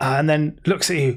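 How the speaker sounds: usual speaking voice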